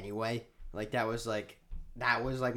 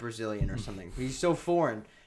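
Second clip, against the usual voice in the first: plain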